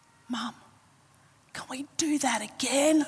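soft, small, little half-whisper. A mother retells what her son half-whispered to her: imitating a child's little half-whisper. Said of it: "whispers to me in this little voice".

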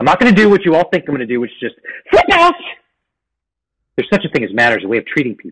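openly upset outburst, pitch swinging wide. Addressing everyone present after wanting to come clean, sounding upset. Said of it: "Are you upset at me?".

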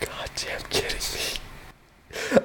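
slow, hushed whisper full of disbelief.

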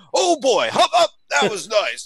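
high, leering, excited exclamation. Recalling his coach watching game film, the speaker imitates him acting like he's watching porno. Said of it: "act like he was watching porno".

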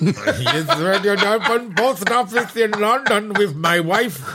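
accent from Pakistan. Trading accents in conversation, switching from Welsh into a Pakistani accent. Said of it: "into a Pakistani accent".

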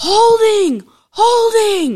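very high, shrill, top-of-the-lungs yelling. Retelling yelling over an uncalled holding penalty: retelling yelling at top of lungs. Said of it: "I'm yelling at the top of my lungs".

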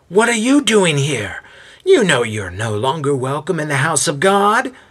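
high-pitched, nasal voice crying out. Narrating a voice crying out in a synagogue courtyard, high-pitched and nasal. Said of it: "A high-pitched and nasally voice cries out".

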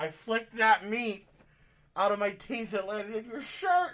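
loud failed whisper. Retelling a woman who covered her mouth but couldn't whisper: imitating a failed whisper, too loud. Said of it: "I heard her try to whisper, but she didn't have a whisper voice".

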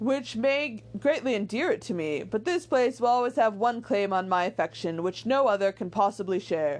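ordinary delivery

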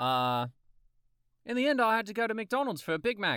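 Australian accent, tried out. Asked by the other speaker for a new accent, telling a story in an australian accent. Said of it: "That's Australian".

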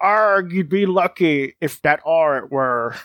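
pirate voice with "arg" at the start. Asked to read a line like a pirate, the speaker reads it in a pirate voice. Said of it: "read it like it a pirate".

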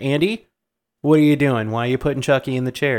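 put-on angry outburst. Retelling a scene where a boy gets scolded: imitating an angry scolding. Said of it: "Maggie's pissed".

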